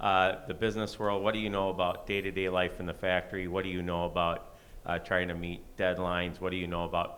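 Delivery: plain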